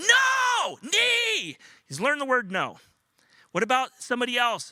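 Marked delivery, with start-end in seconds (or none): 0.0-1.6 put-on high, loud, shouting toddler voice. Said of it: "And if I say to him".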